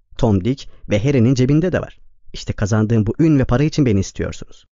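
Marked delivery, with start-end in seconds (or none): none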